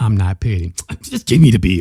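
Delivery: put-on rude, loud, disrespectful delivery. Imitating the woman in the video handing over the bill: imitating a disrespectful tone. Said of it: "she just said it in that video".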